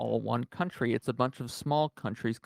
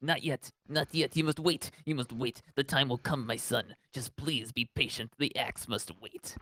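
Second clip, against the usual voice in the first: fake Italian accent, much quieter; 3 dB quieter than usual. Retelling what his coach told him while he waited, in a put-on italian accent. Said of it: "my coach is an Italian guy with a towel".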